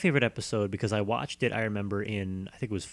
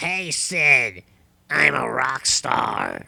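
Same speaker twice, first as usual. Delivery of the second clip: put-on rough, loud voice of sixty-year-old chain smoker; 4 semitones higher, 8 dB louder than usual. Recalling how a character spoke to Sid: 60-year-old chain-smoker voice. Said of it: "he sounded like he was like a 60-year-old chain smoker".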